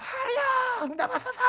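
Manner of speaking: desperate, very high wailing cry. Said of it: "막 이러면서 크게 불렀겠죠".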